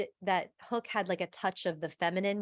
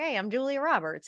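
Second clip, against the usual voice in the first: put-on pitched-up, warm Midwestern accent; 5 semitones higher than usual. Describing an actress's natural voice, imitating Julia Roberts with Midwestern accent. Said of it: "this, like, Midwestern accent. She's like".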